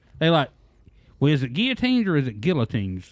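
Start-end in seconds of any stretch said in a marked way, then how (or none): none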